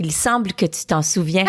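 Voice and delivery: ordinary talk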